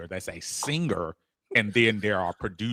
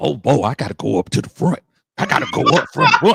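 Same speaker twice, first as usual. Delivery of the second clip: very loud, pitched-up, high hollering; 6 semitones higher, 8 dB louder than usual. Retelling a trip, imitating a friend eager to go up front: imitating Big Low. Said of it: "spot on Big Low impression".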